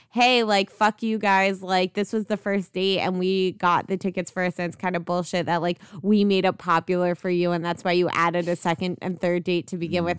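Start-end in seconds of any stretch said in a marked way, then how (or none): none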